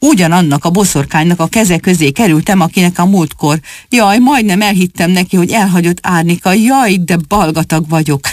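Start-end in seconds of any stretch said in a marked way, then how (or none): none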